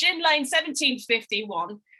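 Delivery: put-on British accent drifting into Australian. Introducing a guest's gin brand: attempted British accent. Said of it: "I've gotta say it in a British accent".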